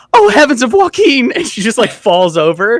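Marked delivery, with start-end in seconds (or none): 0.1-1.3 loud, high-pitched, startled cry. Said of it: "and just goes".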